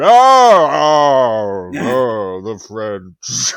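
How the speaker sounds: mock very loud, very slow drunken booming drawl. Retelling a champagne advert blooper: drunk Orson Welles impression. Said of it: "pissed up, shit-faced Orson Welles".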